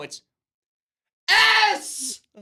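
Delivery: mock screaming. Imitating a game show contestant calling a letter: imitating a contestant screaming. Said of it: "Why are you screaming the letter at me?".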